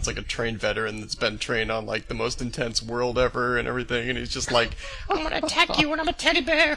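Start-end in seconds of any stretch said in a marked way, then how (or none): 5.1-6.8 very high, squeaky, goofy full cartoon voice. Voicing an attacking Care Bear: Greased-up Deaf Guy voice from Family Guy. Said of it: "that just sounded like the greased up deaf guy".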